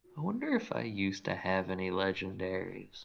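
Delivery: muttered under breath. Voicing a character who wonders aloud to himself, real quiet under his breath. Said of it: "real quiet under his breath".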